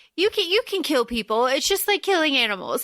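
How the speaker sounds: plain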